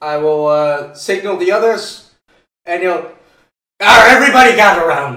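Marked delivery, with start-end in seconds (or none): 3.8-5.2 loud put-on pirate character voice. A player speaks as his chosen game character in a pirate voice. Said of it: "this is the voice I have chosen for my character".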